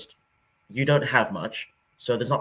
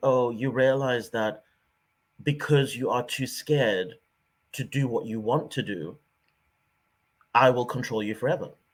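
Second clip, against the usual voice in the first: put-on sarcastic British-accented voice. Retelling a mentor's truth bomb: imitating mentor's British sarcasm. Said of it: "in a very typically British sarcastic way".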